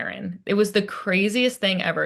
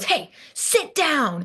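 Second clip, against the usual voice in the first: mock cranky old man voice, high, raised yell; 7 semitones higher than usual. Retelling how an old man yelled at the speaker's nephew, retelling a man's yell. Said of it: "Yells at him".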